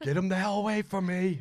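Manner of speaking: mock very high, furious, angry shout. Imitating a father yelling for the mother: imitating a yelling dad. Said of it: "that's where he'd start yelling".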